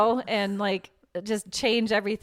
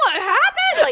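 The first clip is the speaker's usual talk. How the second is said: mock frantic, panicked scream, very high and loud; 5 dB louder than usual. Recounting learning something happened to the son, retelling a panicked scream. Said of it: "I start screaming like".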